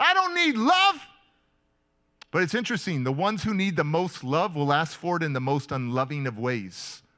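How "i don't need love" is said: very high, shrill screaming. Retelling pushing people off during a group hug, retelling own screaming. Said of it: "And I'm screaming".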